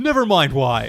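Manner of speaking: slow, loud yelling. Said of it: "That's what they yell at him".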